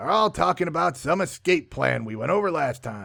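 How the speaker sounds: plain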